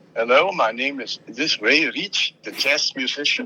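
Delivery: put-on heavily laid-on German accent. Retelling a phone call from a stranger asking for him, imitating Peter Wolf's German accent. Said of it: "this very heavily German accented voice".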